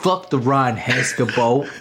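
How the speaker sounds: Southern accent laid on thick, exaggerated. Imitating another speaker, making them sound far more southern: exaggerated southern accent. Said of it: "made me sound way more southern".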